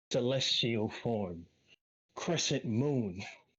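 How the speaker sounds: ringing, echoey, reverberating voice, like in a hall. A narrator voices a foe as her cloak burns away, echoey voice. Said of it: "she will say in a very like kind of echoey voice".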